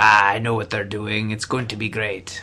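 put-on villainous Italian accent, evil-sounding. Imitating Bob, who has read the comics, with an evil Italian accent. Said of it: "My evil Italian voice".

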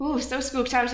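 clumsy fake Scottish accent. Answering an introduction as spooked out, really bad Scottish accent. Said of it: "I'm slipping into a really bad Scottish accent".

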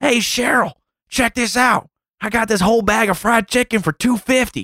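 put-on, very high-pitched old lady holler. Speaker in a grocery store retells hearing an old lady yell, imitating her. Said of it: "I hear this old lady yell".

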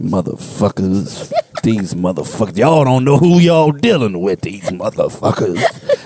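low, deep muttering to himself. Retelling what a stranger in a Starbucks said: imitating someone muttering under breath. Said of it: "I hear him under his breath saying".

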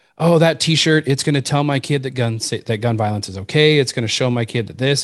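normal talking voice

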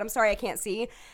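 normal talking voice

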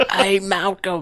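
squeaky, high-pitched Cockney voice. Quoting the voice a movie character hears in the men's room: squeaky high-pitched Cockney voice. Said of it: "this little squeaky, high-pitched, you know, Cockney voice".

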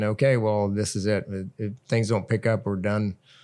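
normal talking voice

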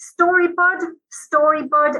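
thick Dublin voice, slow. Explaining a dublin greeting he grew up hearing: strong dublin accent. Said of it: "very strong Dublin accent".

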